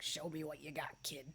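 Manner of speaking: hushed, quiet, gravelly heavy-smoker rasp. Imagining how a requested name sounds, heavy cigar smoker voice. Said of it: "the voice of like a really heavy cigar smoker".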